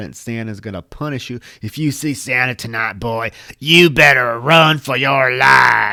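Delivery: very loud, raspy yell with spit flying. Retelling how a man spoke to a little boy about santa, imitating a raspy, spitting voice. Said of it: "his voice is all raspy and he's spitting".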